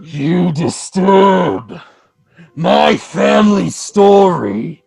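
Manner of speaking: very slow, echoing, booming voice. Storyteller voicing what the listeners hear through the house: booming, echoing voice. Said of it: "with this booming voice echoing the whole house".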